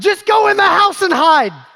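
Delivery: shrill screaming, very high and very loud. Retelling what they screamed at her, retelling a scream. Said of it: "screaming at her".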